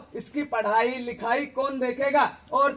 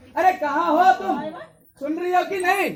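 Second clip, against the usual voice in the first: high, raised, far-carrying calling shout; 5 semitones higher than usual. Man in a sketch calling out to his wife, shouting. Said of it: "क्यों चिल्ला रहे हो?".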